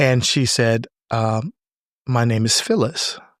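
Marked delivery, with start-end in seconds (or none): 2.1-3.1 put-on shy voice. Retelling meeting someone on a flight who gave her name, imitating Phyllis's shy voice. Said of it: "in this shy voice".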